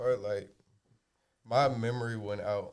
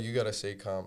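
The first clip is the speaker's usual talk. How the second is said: ordinary talk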